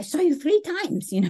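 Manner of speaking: put-on heavy German old woman accent. Retelling a grandma calling on the phone, in a thick German accent. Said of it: "she had like a very thick German accent".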